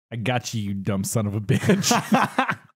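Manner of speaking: low, dead earnest, no joking. Retelling what a man said he would do on meeting Sasquatch: imitating dead serious delivery. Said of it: "And dead serious".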